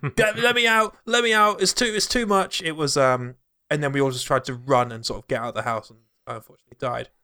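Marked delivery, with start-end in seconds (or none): 0.2-2.6 play-acted high, frantic, stumbling cries of panic. Retelling a friend trapped in a room: imitating a friend yelling. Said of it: "just started yelling".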